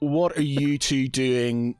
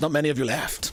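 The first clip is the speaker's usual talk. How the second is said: courteous, polite shopkeeper character voice. Voicing a shopkeeper who greets a Warforged customer: Reginald Farthingwood voice. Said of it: "and he's".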